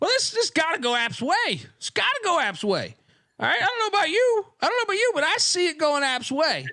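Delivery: exaggerated, very high, swooping southern drawl. Imitating a game announcer calling a play, with a ridiculous southern drawl. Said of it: "he's got this like ridiculously southern drawl".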